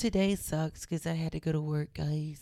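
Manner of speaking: mock-sad voice. Imagining posting on Instagram looking sad, in a sad Eeyore voice. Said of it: "looked like sad, like Eeyore".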